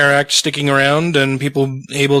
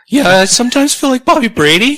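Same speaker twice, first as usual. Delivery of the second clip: strained voice cracking up high and loud. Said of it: "my voice is a little, a little strained tonight".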